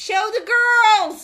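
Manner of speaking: put-on very high, loud, shrill, lecherous old-man voice. Retelling what Jerry keeps saying during football games: imitating Jerry's lecherous old man. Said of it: "you sound like this lecherous old man".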